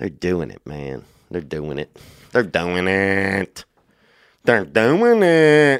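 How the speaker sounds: Pittsburgh accent with long, stretched-out it. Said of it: "That's that Pittsburgh accent".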